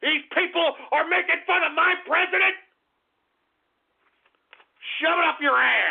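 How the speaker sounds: pissed-off outburst. Ranting at online commenters mocking the president: angry, pissed off. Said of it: "I'm pissed, okay?".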